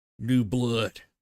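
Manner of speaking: dark, gurgling put-on voice. Narrating a game scene, voicing what Century hears in his head: sinister gurgly voice. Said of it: "a sinister, gurgly voice, and it goes like".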